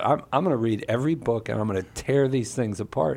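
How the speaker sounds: ordinary delivery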